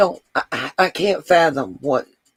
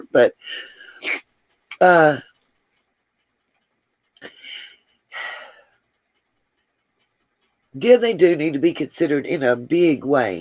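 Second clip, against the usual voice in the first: tearful voice while crying, lower; 3 semitones lower than usual. Talking to Teresa about a family's loss, crying while talking. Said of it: "I'm crying too".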